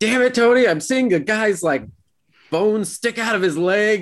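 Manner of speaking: acted-out very high-pitched, shrill yell. Speaker retells Todd yelling at them while watching a show, imitating Todd yelling. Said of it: "yelling at us, like".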